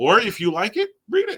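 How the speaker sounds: voice suddenly cracking high mid-line. Giving advice to a co-host on what to read, voice suddenly cracking. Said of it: "why my voice just went full on Bobby Brady".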